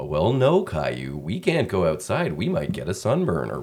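sing-song, clean and wholesome delivery. Recreating his line read for the part, in a clean-cut Caillou's dad voice. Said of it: "like all the voice recordings I had heard from Caillou's dad".

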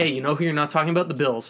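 normal talking voice

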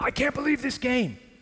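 high, giddy, overexcited voice. Imitating a fan jumping up before the game: imitating an overexcited fan. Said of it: "they start jumping up and down".

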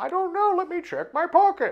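shrill, squeaky, very high-pitched little voice. Voicing a distant figure overheard on the mountain: high-pitched voice. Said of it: "You can hear the high pitch of a".

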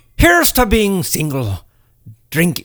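swooping, high-pitched pirate-style voice. Giving a drinking toast to friends, in a pirate voice. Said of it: "Why am I sounding like a pirate?".

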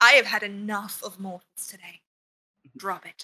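deadly quiet, low, serious, done-with-it tone. Describing a character's sudden shift, the speaker acts out her deadly quiet, deadly serious line. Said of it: "deadly quiet and deadly serious".

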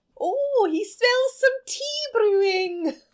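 very high, bad, botched Scottish accent. Riffing on a leprechaun bit with the other speaker, in a bad scottish accent. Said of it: "That was Scottish. That was a bad accent".

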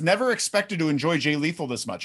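plain

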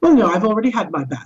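put-on sarcastic nanny voice. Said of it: "she's being sarcastic".

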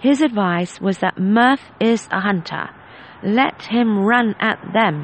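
plain reading voice

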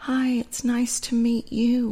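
put-on teeny tiny little voice, high and soft. Retelling first meeting Bill in the office, doing Bill's teeny tiny voice. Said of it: "in this teeny tiny voice".

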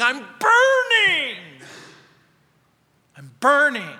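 loud, drawn-out screaming cry swooping in pitch. Retelling a woman's voice screaming while walking past, imitating a woman screaming. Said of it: "she started screaming".

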